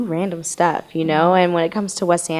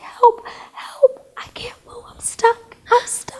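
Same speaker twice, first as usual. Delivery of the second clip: slow, desperate, pleading whisper. Retelling being stuck and calling for help: imitating her own whisper. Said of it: "I was whispering".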